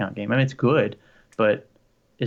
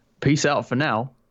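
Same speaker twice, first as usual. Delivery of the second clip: Australian accent; 3 semitones higher than usual. Signing off a live stream when asked, trying an aussie accent. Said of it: "I'll try my Aussie accent".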